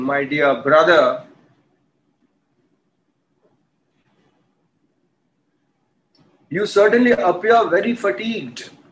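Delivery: sarcastic, taunting tone with false concern. Explaining a story, acting out a king taunting his servant: retelling a king's sarcasm.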